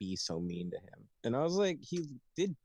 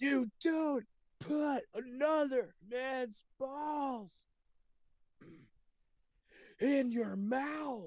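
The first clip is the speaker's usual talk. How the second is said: put-on very high, very slow, drawn-out shout. Retelling a friend's reaction in the car: imitating a friend yelling. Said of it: "Don't yell".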